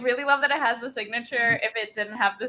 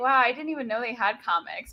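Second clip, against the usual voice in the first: ordinary talk, nothing marked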